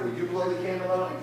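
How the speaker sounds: plain reading voice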